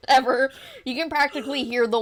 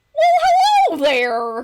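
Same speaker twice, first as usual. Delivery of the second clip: booming, very high horse voice, swooping, stretched well; 9 semitones higher, 8 dB louder than usual. Voicing a horse named Matthew greeting a player: Matthew the horse voice. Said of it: "then Matthew will go".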